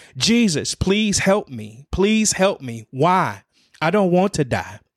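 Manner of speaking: acted, high, desperate, anguished pleading. Retelling kneeling in the hospital parking lot, begging Jesus for help: retelling hollering.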